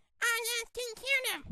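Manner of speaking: plain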